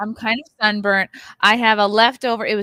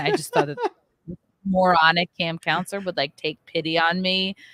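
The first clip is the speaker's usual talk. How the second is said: ordinary delivery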